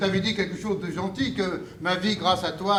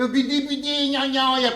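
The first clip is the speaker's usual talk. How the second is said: put-on high-pitched whine, slower pace; 6 semitones higher than usual. Show the person you are talking to how they sound, imitating their high-pitched whine. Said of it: "ta voix qui chouine dans les aigus".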